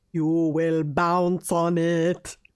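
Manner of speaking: very slow, drawn-out vampire-count voice. Retelling a podcast bit done in the Nosferatu voice. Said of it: "the Nosferatu voice".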